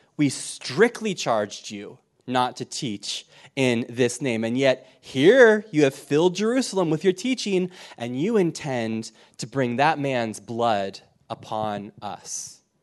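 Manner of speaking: ordinary talk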